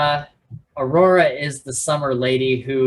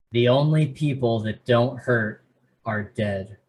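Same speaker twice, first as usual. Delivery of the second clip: put-on solemn, grave, sober delivery; 3 semitones lower than usual. Retelling a character's line to someone about to die: imitating a solemn line. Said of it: "a solemn, like, saying something to somebody who's about to die".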